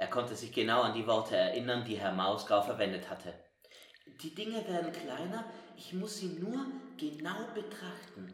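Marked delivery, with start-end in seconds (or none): 4.2-8.3 quiet, soft, hushed, a touch high. Studying the airplane closely, he speaks to himself, said quietly. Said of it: "sagte er leise".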